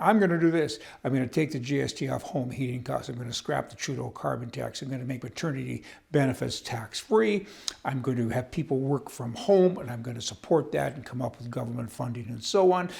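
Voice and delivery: ordinary talk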